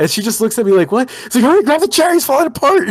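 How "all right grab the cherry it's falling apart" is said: high, play-acted frantic, panicked pleading. Recounting urging their girlfriend as a cookie falls apart: retelling panicked urging. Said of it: "I start freaking out".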